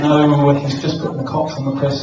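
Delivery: ordinary talk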